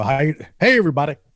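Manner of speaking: put-on deep announcer-style voice. Retelling how a comedian opened his sets, Rodney Shorewood's announcer voice. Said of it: "in a very um, announcery voice".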